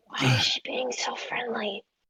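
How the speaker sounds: very quiet, whispered aside. Whispering a question to another character during a game scene: whispering in character. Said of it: "I'm gonna whisper to Jalen".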